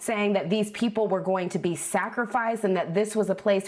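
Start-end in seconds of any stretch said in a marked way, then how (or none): none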